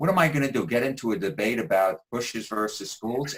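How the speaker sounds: usual speaking voice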